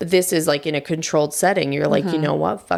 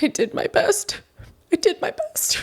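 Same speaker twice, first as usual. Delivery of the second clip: put-on ugly crying voice, higher-pitched; 14 semitones higher than usual. Doing a bit for a friend: imitating Dane Cook. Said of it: "Dane Cook?".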